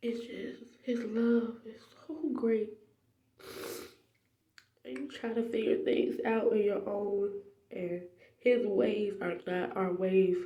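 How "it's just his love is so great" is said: slow, soft, tearful whisper. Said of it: "I'm crying like a big baby".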